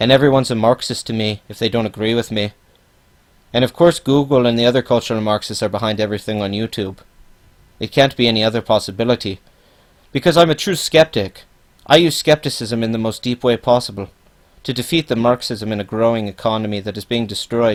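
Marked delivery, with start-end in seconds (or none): none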